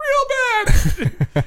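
high-pitched voice. Retelling their answer to someone asking how bad they want to work there, high-pitched voice. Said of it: "And I said in my high-pitched voice".

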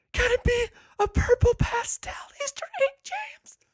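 excited, voice rising and shooting very high. Asking another speaker for a pastel Easter egg: high-pitched voice. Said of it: "your voice went high there".

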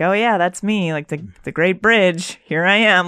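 slow, sarcastic, clueless-sounding drawl. Recapping a scene, acting out Aang's reply, imitating Aang's sarcasm. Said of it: "Aang says something sarcastic here".

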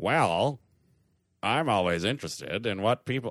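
put-on old-time 1940s radio newsreader voice. Reading a listener's email aloud on the show, 1940s newscaster voice. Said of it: "Talking in a deep voice, like calls are coming from inside the house kind of voice".

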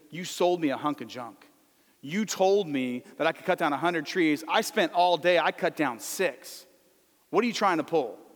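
fed-up, angry, complaining tone. Retelling a joke's customer complaining to the store owner: imitating an angry customer. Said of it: "and he's angry".

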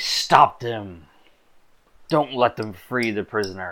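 slow, drawn-out, hissing demon voice. Narrating a game scene, the narrator voices the demons: hissing demons. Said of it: "you hear the demons hiss".

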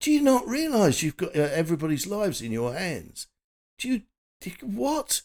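stunned, incredulous tone. Retelling confronting a careless crew member, imitating disbelief. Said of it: "looked at him in complete disbelief".

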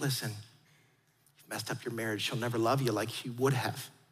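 mock whispering. Retelling what the evil one whispers to him about his marriage, imitating a whisper. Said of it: "And the evil one whispers".

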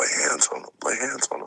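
soft, breathy whisper, spoken aside. Retelling urging a friend to lay hands on an injured player: retelling a whisper. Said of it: "kinda whispered to him".

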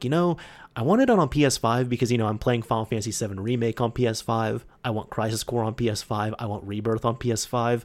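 ordinary talk

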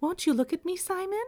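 barely breathed, tiny, very high little voice. Reading a creepy scene where a woman speaks to Simon, small, barely-a-breath voice. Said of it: "Her voice was small as ever, barely a breath".

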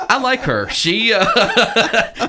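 high, loud, laughing gush of delight.

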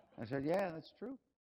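ordinary talk

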